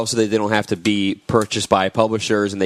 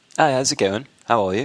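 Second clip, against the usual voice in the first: clumsy, unconvincing attempt at a British accent; 3 semitones higher than usual. Performing a requested British accent for the others: bad British accent. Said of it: "let me hear yours".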